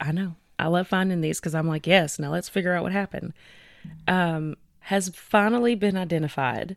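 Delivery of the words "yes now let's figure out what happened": ordinary talk, nothing marked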